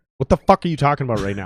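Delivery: put-on angry, outburst-like tone. Retelling a reply to a caller who said everything was right: retelling an angry reply. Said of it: "I was angry about it 'cause I was still pissed off".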